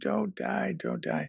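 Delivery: high, tearful, sobbing voice. Retelling how a man embraced a dying teacher: imitating sobbing pleas. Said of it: "sobbing and saying".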